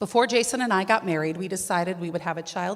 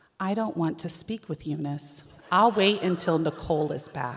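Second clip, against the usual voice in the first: play-acted calm, composed, even-tempered voice; 2 semitones lower than usual. A wife quotes what her husband would tell her, imitating husband's calm voice. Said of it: "He would tell me in a calm voice".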